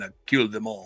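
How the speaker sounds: put-on low quiet Russian accent. Praising the Swedish actor's movies, quote him in a Dolph voice with a Russian accent. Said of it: "in a Russian accent".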